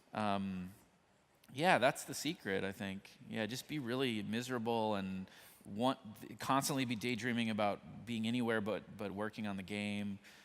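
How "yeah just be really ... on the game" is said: ordinary delivery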